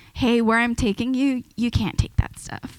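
usual speaking voice

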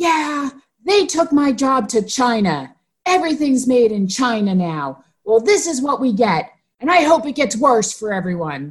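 ranting, put-on woman's shouting voice, pitched high. Retelling a woman with her dog in a playground, imitating her shouting. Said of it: "she's shouting".

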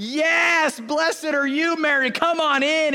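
very slow, loud, high overjoyed scream, "yes" drawn out. Retelling a scripture scene as Elizabeth greets Mary: imitating Elizabeth screaming. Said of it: "she's screaming out".

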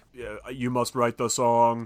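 modulated robot voice. Retelling a movie scene with a voice-modulated character, robotic modulated voice. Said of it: "heavily robot modulated".

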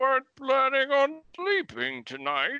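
high, muffled villain voice, as through a mask. Speaking as a dog named Maximus Grundus; Bane voice. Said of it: "Bane voice".

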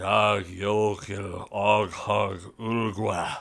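very deep, very slow, dying creature gibberish. Narrating a game, voicing a creature's last words before it falls dead: dying creature muttering. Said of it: "One central eye attached by a fleshy thread rises above its head, and almost like a periscope is looking at you, blinks. It turns its head slowly around, and this does seem to be a goblin, but rather".

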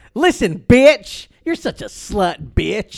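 very loud, brassy, sassy put-on voice. Showing how only some people can say the line: imitating a sassy voice.

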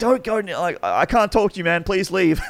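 frantic, panicked, very high and loud. Recalling begging someone to leave while freaking out: retelling a panicked plea. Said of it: "I'm like freaking out".

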